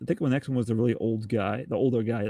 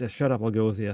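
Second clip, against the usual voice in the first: put-on uninterested, can't-be-bothered tone. Retelling a movie character agreeing to go along: imitating someone who can't be bothered. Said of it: "he can't be bothered".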